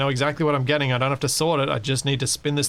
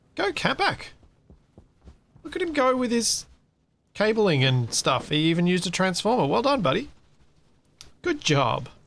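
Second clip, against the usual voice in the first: high, sing-song, condescending pat-on-the-head patronizing tone; 6 semitones higher than usual. Watching someone work with cabling, cheering him on with patronizing praise. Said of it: "could you sound more patronizing?".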